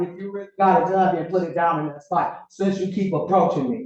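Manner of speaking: ordinary talk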